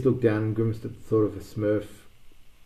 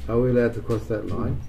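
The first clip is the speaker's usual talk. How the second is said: plain reading voice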